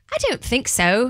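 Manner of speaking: put-on, fake British accent. Asked whether they can do a British accent, answering in a British accent. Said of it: "That's pretty good".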